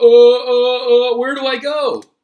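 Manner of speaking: put-on bewildered dorky kid voice, very loud, very slow. Describing a kid standing in the street during an atomic bomb: imitating a kid. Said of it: "the kid's standing there in the middle of the street going".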